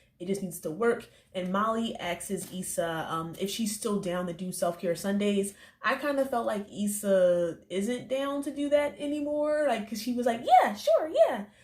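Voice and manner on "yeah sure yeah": very high, loud, hollow, fake squeaked agreement. Recapping an episode, quoting Issa's answer to a question: Issa in a high-pitched voice. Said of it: "high-pitched voice bullshit".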